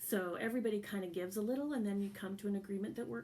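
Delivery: ordinary delivery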